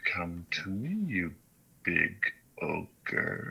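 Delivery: very slow, drawn-out celestial voice. Voicing a being speaking inside a player's head: celestial voice. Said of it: "a celestial voice".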